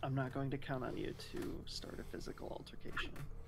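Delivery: soft, breathy laughing whisper.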